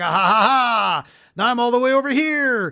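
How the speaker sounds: loud, high, gloating, taunting villain voice with cackle. Retelling a final boss fight, imitating the boss taunting. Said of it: "And he's just like".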